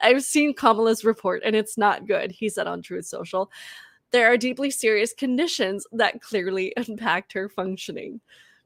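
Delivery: barely composed, suppressing laughter, stifling giggles. The speaker reads a quoted social media post aloud, holding back laughter. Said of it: "I'm literally trying not to cry".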